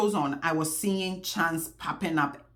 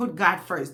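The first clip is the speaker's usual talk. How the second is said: ordinary delivery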